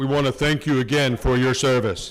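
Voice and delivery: put-on deep voice. Host thanking a guest on stage for his service, in a deep voice. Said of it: "I'll put my deep voice on it".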